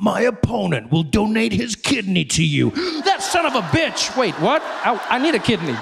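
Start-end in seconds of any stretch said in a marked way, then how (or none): 0.0-2.7 slow, creaky attack-ad announcer delivery. Mocking political attack ads: attack ad voice. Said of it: "you can say anything in that voice".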